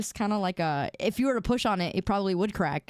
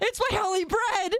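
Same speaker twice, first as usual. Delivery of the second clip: very high, pleading, begging voice; 12 semitones higher than usual. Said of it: "I'll be begging everybody".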